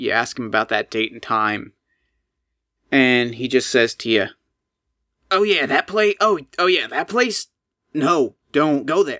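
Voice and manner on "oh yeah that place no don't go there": raspy, hoarse voice, much slower. Acting out a man's reply when asked about the armory, in a raspy voice. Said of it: "He's got that raspy voice".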